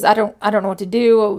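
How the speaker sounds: ordinary delivery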